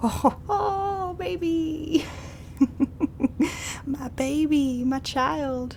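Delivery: put-on high, slow, doting, cooing baby talk.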